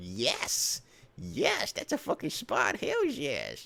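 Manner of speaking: slow, drawn-out, breathy whispered kangaroo voice. Voicing a kangaroo getting his belly rub: voicing a kangaroo getting a belly rub. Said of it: "And he's like".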